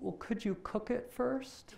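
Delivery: play-acted teary, small, tearful child voice. Retelling a kid's reply after his mother lays into him: imitating a tearful child. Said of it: "he's got tears in his eyes".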